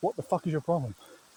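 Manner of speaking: earnest, serious, pointed, no-joking tone. A speaker confronting people mid-rant, getting serious. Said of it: "I'm getting a bit serious here".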